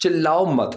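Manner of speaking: ordinary delivery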